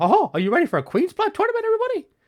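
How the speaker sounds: squeaky, swooping, loud voice. Imagining Mickey Mouse speaking to everybody, in a Mickey Mouse voice. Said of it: "just imagine Mickey Mouse is going".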